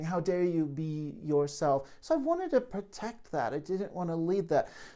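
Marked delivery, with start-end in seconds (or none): none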